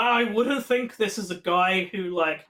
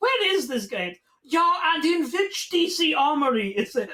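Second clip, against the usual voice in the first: weird, higher-pitched put-on German voice; 8 semitones higher than usual. Retelling what a suspicious character asked: imitating a weird german guy. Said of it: "this weird German guy's like".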